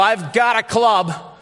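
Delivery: high-pitched, drawn-out yell. Picturing shepherds frightened by a bright light, imitating shepherds yelling. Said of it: "ready to yell".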